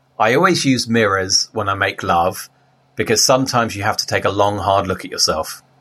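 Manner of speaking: ordinary talk, nothing marked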